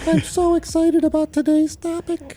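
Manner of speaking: squeaky little gnome voice, very high. Asked to do a gnome voice, the speaker tries it out: gnome voice. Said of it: "You want me to do a gnome voice?".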